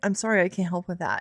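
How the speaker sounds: flat, assistant-like voice. Complaining about a voice assistant's rude new voice, showing the preferred reply; Alexa voice. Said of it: "I would rather it be like".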